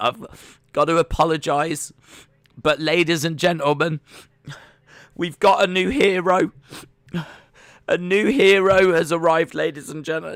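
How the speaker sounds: mock tearful, high-pitched sobbing voice. Retelling a clip of a radio presenter announcing a new hero, imitating someone sobbing. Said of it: "he's he's like sobbing".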